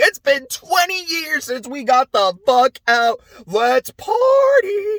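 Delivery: very high voice, cracking and breaking up. Summarizing the trolls story early in the morning, quoting the troll, voice cracking. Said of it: "wow, my voice cracked".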